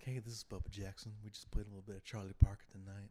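loud, cool, smooth radio DJ voice. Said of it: "smooth voice".

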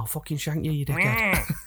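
put-on gritty Manchester street accent. Describing what you hear walking around Manchester, imitating a Manchester local. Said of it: "all you hear is like".

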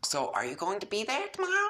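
eager, very high, swooping and rising. Jade speaks to a boy who had been strangely quiet, excited. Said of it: "the excitement returning to her voice".

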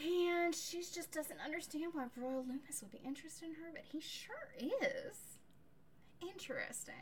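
put-on southern US accent. Summarizing a novel's romance plot for a co-speaker, in a southern accent. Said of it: "you're giving it a southern accent".

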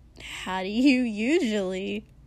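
with a dry laugh. A narrator reads a character's question to a tired companion, with a dry laugh. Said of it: "Dinky asked with a dry laugh".

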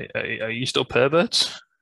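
jittery, nervous, halting stammer with repeated starts. Retelling a wrestling segment, quoting a wrestler asking a question: imitating someone nervous. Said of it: "sort of, like, nervous. He's like".

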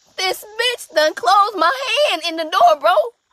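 very high-pitched, shrill, loud yelling scream. Retelling getting a hand caught in a door, acting out screaming to a brother. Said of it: "I'm screaming to my brother like".

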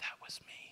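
soft, breathy, close whisper. Voicing words whispered in your ear after something happens: whispering.

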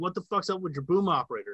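mock heated, put-on yelling. Retelling the crew yelling back: imitating people yelling. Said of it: "they were yelling back at me".

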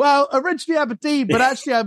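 high mock shouting. Explaining why shouting energy can't last, answering where you're from: mock shouted answer. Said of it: "You can't be shouting with that cadence".

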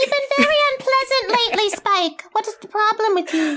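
put-on teeny weeny, high, squeaky helium-sucked voice. Retelling a mom's line to her daughter in a scene, high helium voice. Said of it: "She sounds like she's on helium".

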